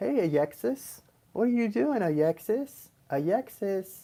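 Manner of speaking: put-on high, slow, babyish baby talk. Recalling how a cousin's dad talked to her; imitating baby talk. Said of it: "he talked baby talk to her".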